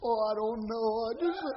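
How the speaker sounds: mock weepy, tearful crying voice through tears. Retelling the answer given when asked why she was crying: imitating someone crying. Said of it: "there were certain times when Valerie just cry".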